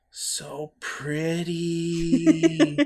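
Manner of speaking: high-pitched mutter, said to oneself. Playing a character caught staring at golden skin: muttering under breath. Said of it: "I mutter under my breath".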